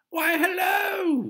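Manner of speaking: very high, very loud exclamation with stretched "hello". A neighbor greets a girl and her mother leaving a store: exclaimed. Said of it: "exclaimed Miss Whisper".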